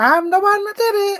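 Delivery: very high, very loud, shrill, booming put-on voice. Repeating a line in a Melanie voice. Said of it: "I'm gonna do it in a Melanie voice".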